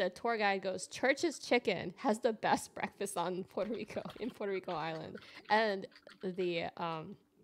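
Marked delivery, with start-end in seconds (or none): none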